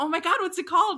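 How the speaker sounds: high, loud, excited, curious, eager delivery.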